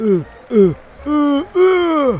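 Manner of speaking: loud, rising mock sobbing and crying.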